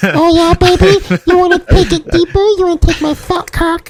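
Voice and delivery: very high, squeaky puppet voice. Asked for his best Elmo impression, he goes into an Elmo impression. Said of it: "Can can we get [name]'s best Elmo impression?".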